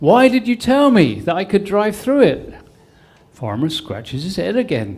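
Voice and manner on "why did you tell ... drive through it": put-on loud, high hollered shout. Telling a joke where the executive, stuck in water, yells: imitating someone shouting. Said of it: "he shouts at the farmer".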